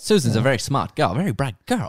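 mid-Atlantic accent on every word. Asked to keep doing the transatlantic one, speaking in a transatlantic accent. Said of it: "can you keep doing the transatlantic one".

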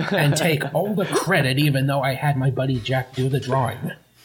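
put-on old man voice. Joking about drawing a page as Stan Lee: Stan Lee impression. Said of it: "That's just too spot on".

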